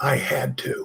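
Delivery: put-on low, soft voice with Spanish accent.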